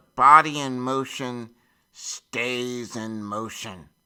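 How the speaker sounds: put-on good, loud southern Texas accent. Retelling what a woman with esophageal cancer told the speaker, good texas accent. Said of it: "in her southern, good Texas accent".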